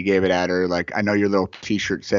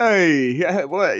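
sudden, thrown-out, punchy "hey"; 10 semitones higher, 3 dB louder than usual. Imitating the wrestling referee after a heel turn: Tony Danza impression. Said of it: "he would just kip up and go".

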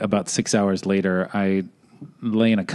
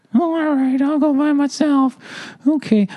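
put-on very high-pitched little-boy voice. Retelling a camping story, answering being told to go sledding alone, in Young John's voice. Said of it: "I got to do this in Young John's voice".

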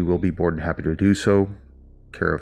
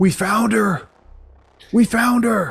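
very high, shrill, loud screaming; 5 dB louder than usual. Narrating a scene as four men head to town, somebody screams: screaming. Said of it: "you don't hear somebody scream".

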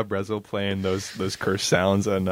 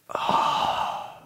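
whispered, toneless aside. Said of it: "I just hear D J go".

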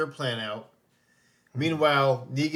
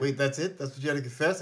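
ordinary talk

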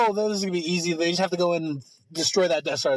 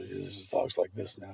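very low, quiet, rough, creaky grumble; 11 semitones lower, 10 dB quieter than usual. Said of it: "You just need kinda a low grumble".

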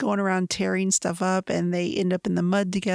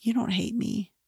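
soft, half-whispered voice; 3 semitones higher, 3 dB quieter than usual. Retelling a kiss scene from a book, the man's reply, retelling a half-whisper. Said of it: "he whispers back".

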